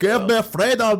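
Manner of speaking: bad put-on Scottish accent. Quoting William Wallace from Braveheart: worst William Wallace Scottish accent.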